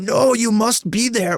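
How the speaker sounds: bad put-on Japanese accent, very high, drawn out. Retelling how she insisted the Americans be there, in worst Japanese accent impression. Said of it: "Worst Japanese accent impression".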